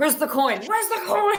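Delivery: shrill, very high, loud, angry, insistent voice. Acting out shaking a thief for a coin: demanding while shaking someone. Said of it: "as I'm shaking the thief".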